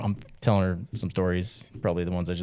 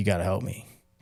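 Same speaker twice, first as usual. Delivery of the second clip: acted, hard desperate begging tone. Retelling a man's plea for help during gridlock: imitating someone begging. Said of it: "begging for my help".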